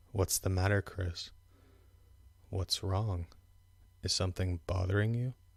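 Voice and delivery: put-on, really low, dropped voice. Retelling how others would question the speaker: imitating a really low voice. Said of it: "They would drop their voice really, really low".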